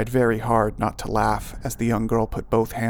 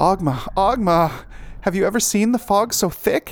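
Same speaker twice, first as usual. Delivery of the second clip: very high, bubbling, eager, chirping, piping voice; 9 semitones higher, 4 dB louder than usual. A girl calls out to someone, piping and bubbling. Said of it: "Maya piped, wide-eyed and bubbling".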